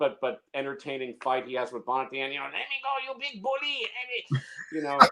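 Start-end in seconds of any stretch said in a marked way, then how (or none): 2.4-4.4 very high, pitched-up protesting voice. Quoting the small henchman's line from the final fight: Hervé Villechaize impression. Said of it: "That was a very good impression".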